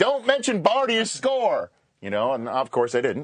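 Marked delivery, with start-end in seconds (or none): 0.0-1.7 very high, screeching southern twang. Recalling being live on air when a voice screamed in their ear: retelling a southern-twang scream. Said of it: "this southern twang screaming in my ear".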